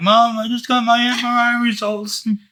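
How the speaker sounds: mock very high, slow, weepy crying voice. Retelling a phone call to mother after good scan results: imitating own past crying. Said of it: "and I'm still crying".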